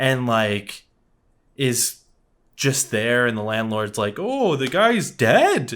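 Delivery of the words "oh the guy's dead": put-on Irish accent, slow and high. Retelling a movie scene, the speaker voices the landlord: put-on Irish accent. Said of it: "That was like an Irish accent you just did".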